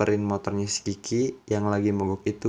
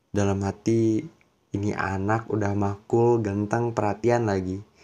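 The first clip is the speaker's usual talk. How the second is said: ordinary talk, nothing marked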